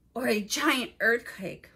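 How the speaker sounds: ordinary delivery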